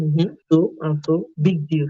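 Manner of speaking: usual speaking voice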